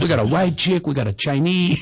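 bad, exaggerated put-on Cuban accent. Like you're still doing your friend's voice, rattling off the band members she's pointing out, accent deliberately overdone and silly. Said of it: "I'm imitating Ileana with a bad Cuban accent".

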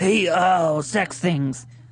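put-on leering, creepy guy voice. Asked on a call-in show for an example: put-on creepy guy voice. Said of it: "That's your creepy guy voice?".

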